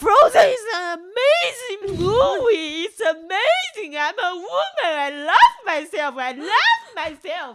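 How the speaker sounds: very loud, shrill, high, drawn-out yell. Retelling a moment in the bathroom: retelling own yelling. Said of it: "I was yelling out".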